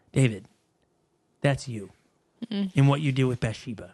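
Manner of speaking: calm, low, steady, even voice. Retelling Nathan's reply to David, imitating Nathan's calm voice. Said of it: "Nathan says in a calm voice".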